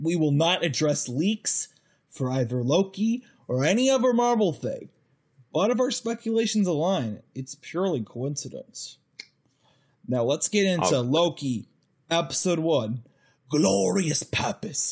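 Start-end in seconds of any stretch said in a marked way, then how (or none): 11.0-14.9 bad generic fake British accent, drawled slowly. Speaker introduces the Loki episode one discussion in a bad Loki voice.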